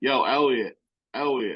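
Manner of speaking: poor, unconvincing attempt at a Philly accent. Retelling how a guy greets Elliot, in [name]'s bad Philly accent. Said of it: "has the bad Philly accent".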